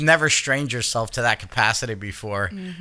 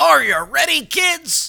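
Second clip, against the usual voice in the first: mock strained voice, higher and louder; 6 dB louder than usual. Mocking another speaker's opening greeting: imitating a straining voice. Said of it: "You're like".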